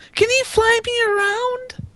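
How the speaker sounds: very high, unconvincing put-on child voice. Voicing kids begging to pet a horse: failed child's voice. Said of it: "I cannot do a child's voice".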